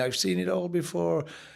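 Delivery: soft, low-key, fond put-on Irish accent. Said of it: "in his Irish accent".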